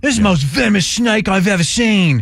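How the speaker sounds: put-on Australian accent. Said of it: "we add the Australian accent".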